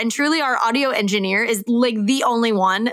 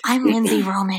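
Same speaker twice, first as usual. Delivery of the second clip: put-on softened, gentle voice. Repeating own trashed intro take to the co-host: imitating own softened voice. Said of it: "I go".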